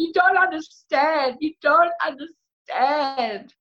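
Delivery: very high, acted crying and sobbing. Retelling what she said to her boyfriend back then, re-enacting a sobbing plea. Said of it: "I'm like sobbing".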